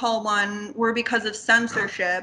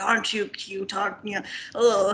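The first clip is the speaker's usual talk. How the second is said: put-on creepy old grandfather voice; 3 semitones lower than usual. Retelling a film scene of a grandfather with his grandson: imitating a creepy grandfather. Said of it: "being creepy with his grandson".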